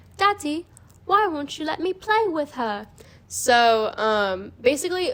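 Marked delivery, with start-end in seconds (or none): 0.2-2.9 put-on high, small little British girl voice. Retelling a story where a voice is heard every night, little British girl voice. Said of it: "this like little British girl's voice and she's like".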